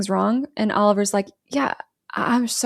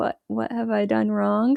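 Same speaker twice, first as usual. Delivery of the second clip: mock uneasy, awkward, uncomfortable tone; 3 dB quieter than usual. Retelling a film scene where a guest asks what he did wrong: imitating someone awkward. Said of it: "he's just sitting there awkwardly like".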